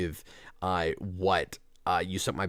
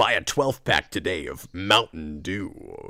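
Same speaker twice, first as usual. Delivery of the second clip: put-on robot voice, much lower; 2 semitones lower than usual. Optimus Prime is selling Mountain Dew; deliver the pitch in an Optimus Prime voice. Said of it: "Optimus Prime in that Peter Cullen voice go".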